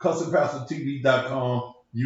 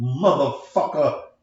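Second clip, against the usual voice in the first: both halves of motherfucker, mother and fucker, punched hard; 4 dB louder than usual. Showing the audience how to say it: emphasis on MOTHERFUCKER. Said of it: "you have to put emphasis on the word motherfucker".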